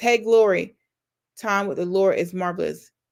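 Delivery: ordinary talk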